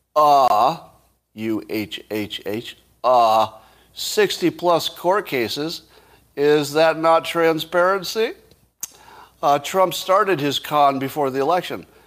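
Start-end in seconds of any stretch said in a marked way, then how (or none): 0.1-8.3 very slow, drawn-out, mocking sarcasm. Reading out a sarcastic reply on Twitter: imitating a sarcastic reply. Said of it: "And Ellen says sarcastically".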